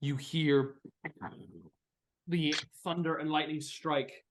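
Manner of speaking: ordinary talk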